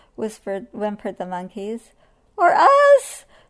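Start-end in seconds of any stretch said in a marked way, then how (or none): 2.3-3.2 shrill, piercing, very high, loud squealing cry. The peccaries answer right after the monkeys, squealing. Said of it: "squealed the peccaries".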